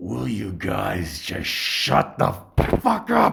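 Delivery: sudden, rough, furious scolding outburst. Retelling how a man stopped and turned to face their table; retelling an angry outburst. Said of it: "And he slams on the table hard".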